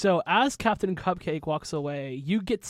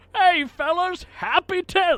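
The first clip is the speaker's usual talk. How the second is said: put-on older man character voice; 12 semitones higher, 6 dB louder than usual. Voicing an older man who is a little cupcake greeting the crew: Captain Cupcake voice. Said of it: "This is Captain Cupcake. And he says".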